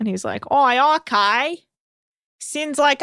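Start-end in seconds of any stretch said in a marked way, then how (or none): 0.5-1.6 slow, put-on Australian accent. Speaker retells a friend's reply to the doctor, put-on australian accent. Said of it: "Okay, he's not Australian".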